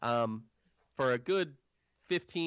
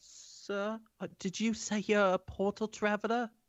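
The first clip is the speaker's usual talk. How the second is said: tiny mouse creature voice, much higher pitch; 7 semitones higher than usual. Narrating a fantasy scene, voicing a small mouse person who approaches, in a small mouse person voice. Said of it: "a small mouse person sort of approach".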